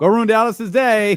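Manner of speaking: awkward, very high-pitched, loud, encouraging delivery. Imitating a pep talk said with a smile: imitating Tom Brady saying it with a smile. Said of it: "And he says it with, like, a smile".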